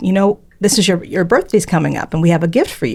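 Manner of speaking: ordinary talk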